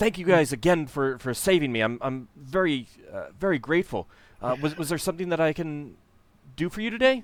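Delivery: excited, eager gushing. A game narrator voices a man thanking the group for saving him, excited and grateful. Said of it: "kind of excitedly says".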